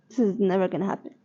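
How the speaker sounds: ordinary delivery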